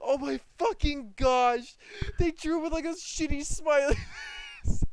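very loud, high crying laughter through every word. Reacting to a drawing on stream, crying with laughter. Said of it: "I'm crying".

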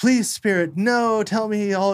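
high, slow, begging and pleading tone.

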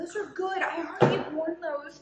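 high, wailing, upset voice full of dismay.

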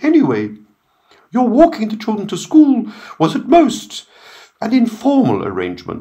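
very high, airy sing-song crowing. As another man stays silent, a woman speaks up, crowing airily. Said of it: "Blake to crow airily".

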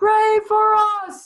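very high, loud, roof-raising group scream. Recalling how the students answered their teacher, retelling a group scream.

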